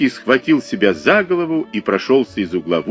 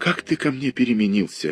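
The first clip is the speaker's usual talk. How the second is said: sighed, much quieter; 7 dB quieter than usual. A woman, brushed off by the painter, asks him this sighing. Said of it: "вздохнула Ольга Ивановна".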